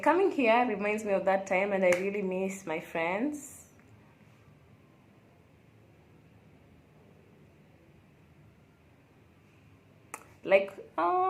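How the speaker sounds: crying while talking, tearful voice. Remembering a past trip and missing friends, crying while talking. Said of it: "I'm crying".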